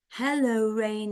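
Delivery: ordinary talk, nothing marked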